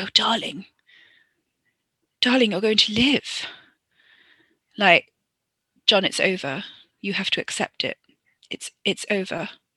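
oblivious, reassuring tone. Retelling a film scene, mocking the hero's lines: imitating Harker. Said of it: "being like".

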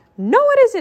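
very high-pitched, shrill shouting. Narrating a story, a character shouts back from inside a tent: shouting. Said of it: "Mickey shouted from inside the tent".

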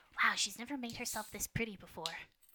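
whispering out loud, audible stage whisper. Narrating a game scene, voicing a character who leans in to someone nearby, whispering out loud. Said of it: "She just whispers out loud".

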